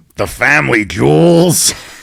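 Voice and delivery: rough, raspy voice. Co-host performs a remembered quote from an actor; raspy voice impression. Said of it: "in this raspy ass voice".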